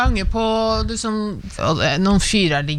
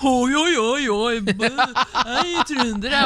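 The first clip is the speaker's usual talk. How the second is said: high, mocking Trøndelag dialect. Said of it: "sånn der dialekt".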